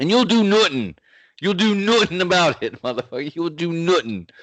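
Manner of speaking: very high, taunting, put-on Irish accent. Taunting the other podcast host, the speaker switches to a Conor McGregor impression. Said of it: "Let me say it like Conor McGregor".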